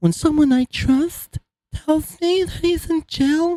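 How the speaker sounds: very high, near-tearful whine. Repeating a guy's line back to mock him, mimicking his voice jumping way up. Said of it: "Why does his voice go up seven octaves?".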